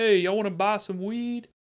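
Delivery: put-on, very high hollered call, yelled out. Telling a story, the speaker acts out guys on a porch calling to passing skaters, retelling a yell. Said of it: "we hear them yell out".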